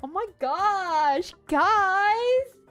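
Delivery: put-on Valley girl accent and voice. Imitating a game character just called a Valley girl: Valley girl voice. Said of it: "She's absolutely a Valley girl".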